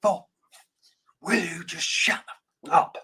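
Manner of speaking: slow, very aggressive snapping voice.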